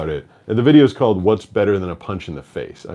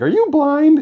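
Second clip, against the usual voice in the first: put-on high, loud, psyched, excited kid voice. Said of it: "he said it like he was psyched".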